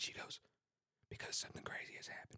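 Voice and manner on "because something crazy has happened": whispered under the breath, very quiet. Retelling what the wedding planner whispered at a team meeting: imitating a whisper. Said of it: "why are we whispering?".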